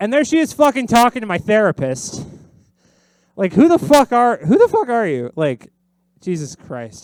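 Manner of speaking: crashing-out, disbelieving rant, high and swooping. Speaker tells a story about her birthday, crashing out and ranting. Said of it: "Crashing out a little bit".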